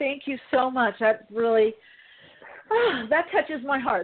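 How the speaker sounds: moved almost to tears, teary, touched, thankful tone. Thanking a listener for praising the show's work, teary-eyed and touched. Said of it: "I'm teary-eyed".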